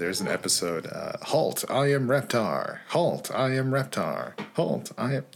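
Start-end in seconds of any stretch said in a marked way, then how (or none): 1.2-5.2 high-pitched toy dinosaur voice. Recalling an episode with the toy dinosaur from Rugrats: Reptar toy voice. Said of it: "the toy dinosaur from Rugrats".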